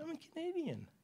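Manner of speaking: tiny, soft, meek voice at very high pitch. Retelling how she answered about her passport, imitating a little meek voice. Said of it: "She has a little meek voice like this".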